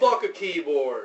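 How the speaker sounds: very loud, excited yelling. Speaker reacting in a conversation about mobile browsing, yelling. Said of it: "I didn't mean to yell".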